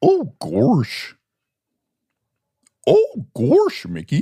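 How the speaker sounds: high, swooping cartoon drawl, "gosh" said as "gorsh". Doing an impression for the other to guess: Goofy impression. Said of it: "Do you know who this impersonation is?".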